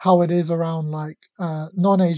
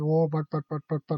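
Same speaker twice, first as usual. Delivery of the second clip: put-on Indian accent; 5 dB quieter than usual. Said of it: "do the Indian accent".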